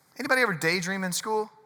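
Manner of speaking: plain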